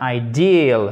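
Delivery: stress on the "deal" part of ideal. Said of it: "accent tonique sur la seconde partie du mot".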